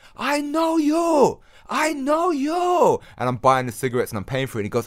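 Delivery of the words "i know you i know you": shrill, very high, very drawn-out screaming. Speaker retelling a man in a shop who recognised him: retelling a man screaming. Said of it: "he just started screaming".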